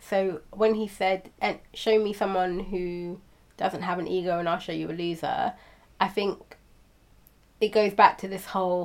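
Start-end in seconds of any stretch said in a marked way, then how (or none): none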